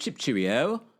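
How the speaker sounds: put-on English accent. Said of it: "please do not have the fake [name] and [name] accent".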